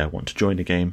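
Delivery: ordinary talk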